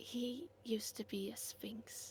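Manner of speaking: slow, very quiet hushed whisper. Whispering to Luann in character about a sleeping companion: whispering. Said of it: "I whisper to Luann".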